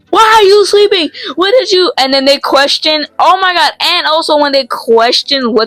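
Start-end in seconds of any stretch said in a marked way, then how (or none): 0.1-1.9 put-on yell, higher pitched. Retelling how a teacher wakes a student sleeping in class: imitating a teacher yelling. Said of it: "yells at you".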